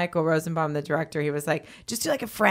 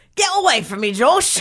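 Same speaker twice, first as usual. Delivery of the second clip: loud yelling in a strict storybook nanny voice; 7 semitones higher, 5 dB louder than usual. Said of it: "sounds like Mary Poppins yelling at me".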